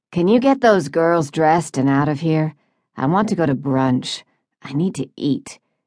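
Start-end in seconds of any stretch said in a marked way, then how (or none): none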